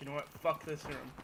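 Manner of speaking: ordinary delivery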